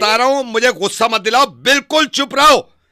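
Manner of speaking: furious, angry yelling, loud and high. In a heated argument, ordering the other person to stay quiet, angry yelling. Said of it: "चिल्लाए जा रहे हो".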